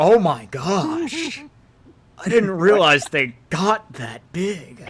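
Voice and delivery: awed, slow, swooping voice full of wonder. Voicing a demon staring at a huge dragon: in awe. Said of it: "He's just looking at him in awe".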